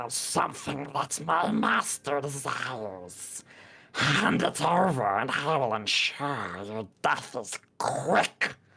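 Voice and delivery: slow, high, unsettling gurgling hag voice. Narrating a scene, the speaker voices a hag pointing a wand: unsettling, gurgling hag voice. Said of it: "says in an unsettling, gurgling voice".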